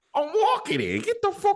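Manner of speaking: high-voiced, put-on New York accent. Speaker acts out people in Mario's world, in a New York accent. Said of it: "It's a New York accent".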